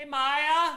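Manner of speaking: high, loud, obnoxious yell.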